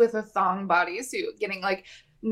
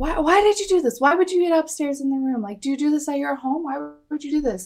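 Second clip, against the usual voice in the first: put-on high-pitched, accusing, demanding, rapid-fire yelling; 5 semitones higher than usual. Retelling a quarrel where Dorinda yells into Vicky's face: imitating Dorinda yelling. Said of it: "yelling into Vicky's face".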